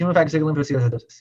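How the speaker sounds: rattled off very quickly, rushed pronunciation. Explaining a rare mechanism, saying its long name very fast. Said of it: "I'm going to try to say this real fast".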